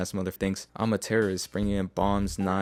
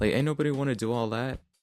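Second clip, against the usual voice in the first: ordinary talk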